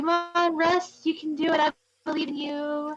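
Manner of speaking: heavily sarcastic, encouraging-sounding delivery. A player's character gives a companion making a fire a thumbs up, very sarcastic encouragement. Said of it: "gives a very sarcastic thumbs up and goes".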